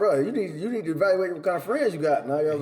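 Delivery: ordinary delivery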